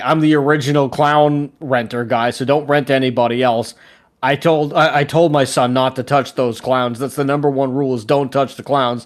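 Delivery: ordinary delivery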